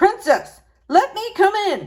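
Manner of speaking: gruff, rough voice pitched very high. Reading a fairy tale, a voice knocks at the door during dinner: gruff voice. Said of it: "said a gruff voice".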